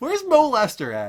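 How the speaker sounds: high, slow, sing-song mock calling voice.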